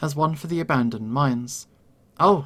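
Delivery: ordinary delivery, nothing marked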